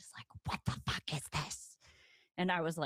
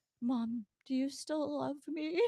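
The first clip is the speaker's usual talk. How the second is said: put-on tearful crying voice, higher pitch; 9 semitones higher than usual. Retelling asking mom a question after getting home: imitating own past crying. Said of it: "And I was crying".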